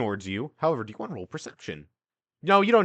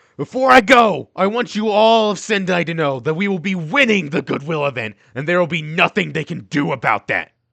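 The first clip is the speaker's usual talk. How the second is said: booming, very loud, pitched-up declaiming voice; 6 semitones higher, 9 dB louder than usual. Game narrator voices Kaz addressing everyone as they leave, Kaz's very loud voice. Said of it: "in a very loud voice".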